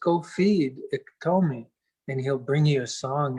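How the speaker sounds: ordinary delivery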